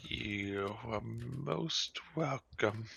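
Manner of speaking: put-on very slow, soft, rickety old voice. The game master voices the shopkeeper after a customer pays, rickety old dragonborn voice. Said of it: "You see sitting behind the counter a rickety old dragonborn sitting there. / And then you hear a scraping as a bottle goes flying into her hand. ... You see her reach down and pull out like a carpet b".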